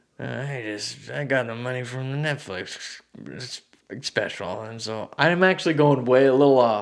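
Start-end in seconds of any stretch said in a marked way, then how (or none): 0.2-4.7 put-on soft, old-sounding voice with a touch of Southern twang. Asked for his best Jerry Jones impression, the speaker does a Jerry Jones impression. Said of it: "What's your best uh, Jerry Jones impression?".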